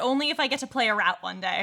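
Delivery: ordinary talk, nothing marked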